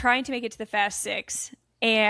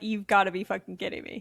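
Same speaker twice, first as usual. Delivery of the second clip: put-on furious outburst; 3 semitones lower, 5 dB quieter than usual. Acting out his reaction to being told sorry, imitating a furious rant. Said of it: "He was pissed as hell".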